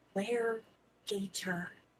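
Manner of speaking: hushed whisper. A player's character whispers a question to her companion; whispering. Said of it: "I whisper to her".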